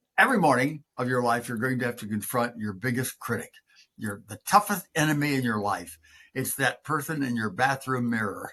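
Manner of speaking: normal talking voice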